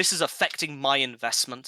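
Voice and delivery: ordinary delivery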